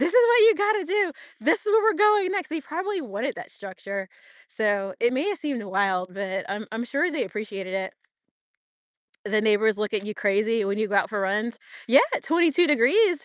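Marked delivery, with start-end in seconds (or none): 0.0-2.5 mock, very high-pitched screamed shout. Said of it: "just scream out".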